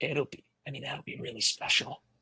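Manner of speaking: soft, hushed, reverent whisper.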